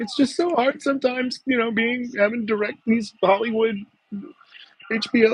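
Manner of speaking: play-acted tearful, blubbering whine, very high pitch. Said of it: "wants to sit there and cry and be like".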